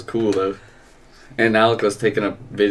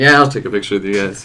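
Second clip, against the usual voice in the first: ordinary delivery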